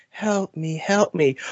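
very soft, breathy voice. Acting out that guy's line from the scene, in a very soft, breathy voice. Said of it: "he's talking in that very soft, breathy voice".

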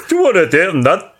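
high, fast mock Geordie accent.

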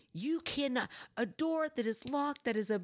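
shrill, very high, furious angry yell. Telling a story, the speaker re-enacts yelling at him: retelling own angry yelling. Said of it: "I'm like yelling at him".

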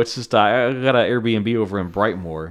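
ordinary delivery

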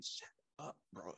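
very soft, breathy whisper under the breath. Retelling how a friend in the passenger seat leaned back: imitating a whisper. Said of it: "he's whispering to me".

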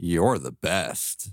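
sarcastic. Asked to let them hear their sarcasm, the speaker demonstrates it: sarcastic. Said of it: "let's hear your sarcasm".

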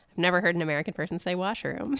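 normal talking voice

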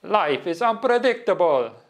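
put-on Italian accent. Quoting a phrase an italian man always told him: imitated italian accent. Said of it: "in his Italian accent, which I can't do, but I'll try".

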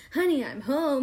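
self-assured, seductive, sexy, confident delivery. Describing a film scene, quoting Catwoman's line in her sexy, confident way. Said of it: "she says it in this really like sexy and like confident".

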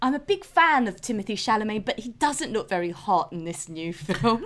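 put-on British-accented voice. Retelling what a cousin said about a new film: imitating cousin's British voice. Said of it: "do my cousin's voice".

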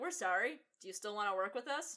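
mock, faintly sarcastic tone. Describing a scene, acting out what he says, mock faintly sarcastic. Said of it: "vaguely, faintly sarcastic".

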